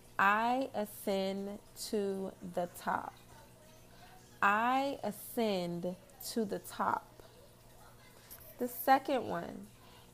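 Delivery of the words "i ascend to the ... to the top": very slow, deliberate, dictation-like pace. Reading an affirmation to listeners so they can write it down, very slow. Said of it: "I'm going to read them very slow".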